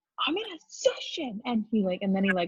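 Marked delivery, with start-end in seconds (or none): 0.3-1.4 mock yell, much higher. Retelling how a guy in a Zoom session yelled at his mom: retelling a yell. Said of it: "He like yells at his mom".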